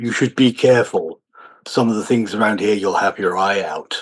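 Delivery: very deep, heavy, ponderous, weighty voice. Narrator voicing a stranger the players bump into, in a deep, heavy voice. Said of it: "a deep, deep voice, almost heavy Gothic letter script speech says".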